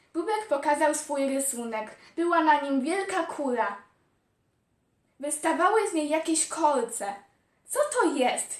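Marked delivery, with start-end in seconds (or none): 7.6-8.6 taken-aback, surprised questioning tone. Kuki, shown Bubek's drawing of a big spiky ball, asks: surprised. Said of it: "Zdziwił się Kuki".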